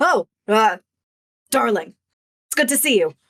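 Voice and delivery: smug, self-satisfied tone. Voicing a smug character greeting a player: smug. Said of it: "He looks smug".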